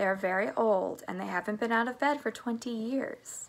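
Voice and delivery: plain reading voice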